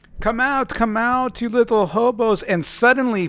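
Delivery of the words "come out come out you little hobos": high-pitched, loud, taunting, mocking tone. Voicing Lois calling into the attic, a mocking taunt. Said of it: "and she goes".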